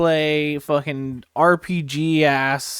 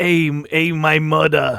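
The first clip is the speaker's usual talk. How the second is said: put-on Bronx accent, louder; 4 dB louder than usual. Describing a show, imitating how a man in it talks, bronx accent. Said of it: "sounds like he's from the Bronx".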